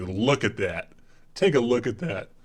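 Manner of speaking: low, deep-voiced male presenter announcer voice. Mocking the other speaker's picture commentary: imitating a deep-voiced man. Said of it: "hearing a man with a deep voice say".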